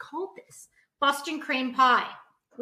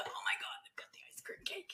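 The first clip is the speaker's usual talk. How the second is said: breathless, thrilled, excited whisper; 5 semitones higher, 16 dB quieter than usual. Retelling arriving at a kid's birthday party: imitating an excited partygoer. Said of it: "it was very exciting".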